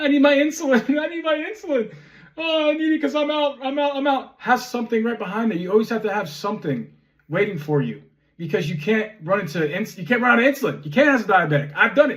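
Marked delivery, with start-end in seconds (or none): 0.0-4.3 put-on high, childish sobbing like a five-year-old. Retelling rushing into a pharmacy at closing for insulin, imitating crying like a five-year-old. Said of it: "I'm crying like a five year old".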